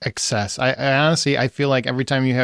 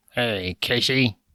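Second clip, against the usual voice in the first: deliberately bad, creepy menacing voice; 2 semitones lower, 3 dB quieter than usual. Discussing a scary phone call scene, the speaker tries a bad Ghostface impression. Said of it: "that's a really bad impression".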